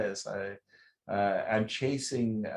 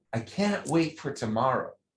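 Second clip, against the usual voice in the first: eager, can't-wait, excited, delighted voice; 4 semitones higher than usual. Explaining how to deliver a joke's setup, in a great excited voice. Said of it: "you just say this like with a great, excited voice".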